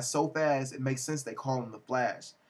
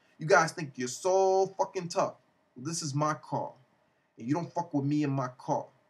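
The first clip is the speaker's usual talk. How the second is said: put-on really thick, heavy Spanish accent; 2 semitones higher than usual.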